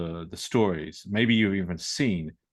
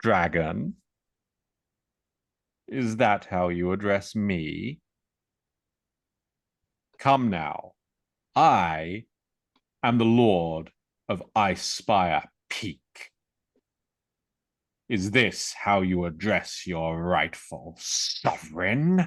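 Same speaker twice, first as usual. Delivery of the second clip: snakelike voice, sly and amused. A game master voices a dragon speaking to the players, sly serpentine amused voice. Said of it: "it's a sly, serpentine, amused voice".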